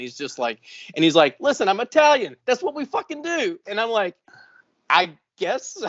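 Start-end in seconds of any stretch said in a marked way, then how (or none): 1.4-3.6 put-on very high, heavy, thick New York Boston accent. Retelling what a partying dude told him, in a thick new york boston accent. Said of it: "this total fucking New York Boston accent".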